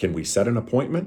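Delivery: pitch rising at the end on "appointment". Teaching tone on a question about setting an appointment: rising at the end on appointment. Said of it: "the wrong way to do it is to have the upward inflection at the end of a question".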